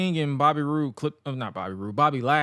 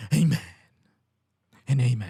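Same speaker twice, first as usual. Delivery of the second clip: imitated mellow, soft preacher voice. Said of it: "That's how mellow that man was".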